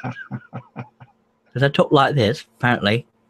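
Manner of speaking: snooty upper-class British accent, slow and swooping. Explaining that someone says their british accent sounds posh, demonstrating a posh british accent. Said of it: "Jamie Page says I sound posh".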